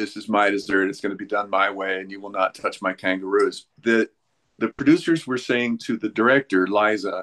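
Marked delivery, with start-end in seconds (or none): none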